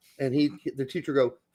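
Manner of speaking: ordinary delivery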